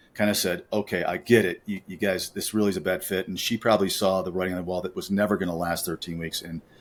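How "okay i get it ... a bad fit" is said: ordinary talk, nothing marked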